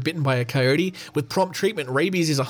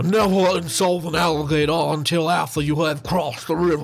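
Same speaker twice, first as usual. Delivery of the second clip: put-on Southern Tennessee accent. Quoting an american politician from tennessee, in a tennessee accent. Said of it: "That was my Tennessee accent".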